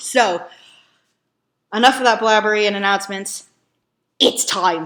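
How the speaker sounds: terrible, fake, put-on Irish brogue. Host wrapping up announcements before watching, in a terrible Irish accent. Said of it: "forgive my terrible Irish accent".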